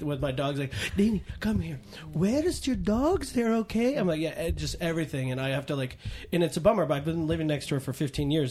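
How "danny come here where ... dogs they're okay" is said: put-on higher-pitched Hungarian accent. Imitating a Hungarian neighbor of fifteen years asking about the dogs, in her Hungarian accent. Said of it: "she's got a great accent".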